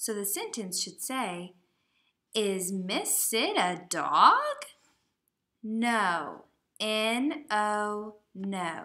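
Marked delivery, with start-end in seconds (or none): 2.3-4.3 upward questioning-style lift on the word dog. Teaching to use the question voice at a question mark: question voice. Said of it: "you need to use your question voice".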